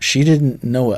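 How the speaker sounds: ordinary delivery, nothing marked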